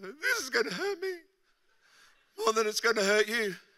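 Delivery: high, tearful crying voice, words through tears. Retelling dad's words before a punishment, imitating dad crying. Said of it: "and he's crying".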